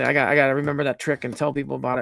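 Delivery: ordinary delivery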